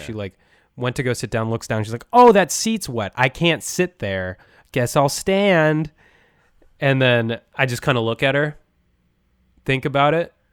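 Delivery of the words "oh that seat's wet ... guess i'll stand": loud, drawn-out announcing voice. Retelling a passenger announcing a wet seat to the car, imitating someone speaking loudly. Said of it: "she said very loudly".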